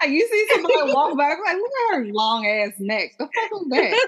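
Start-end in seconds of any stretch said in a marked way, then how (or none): 1.6-4.1 sassy, catty, acted delivery full of attitude. Acting out a remark on someone walking by: imitating someone with an attitude. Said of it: "you get an attitude".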